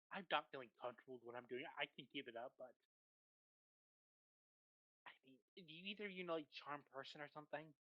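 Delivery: very soft, hushed half-whisper, very quiet. In a tabletop game, ignoring a captive, the character speaks to companions, half-whispering. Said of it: "I'm kind of whispering to them".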